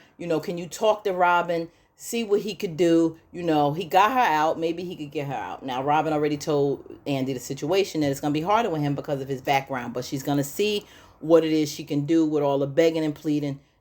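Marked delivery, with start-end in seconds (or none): none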